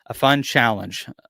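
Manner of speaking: stress on challenge.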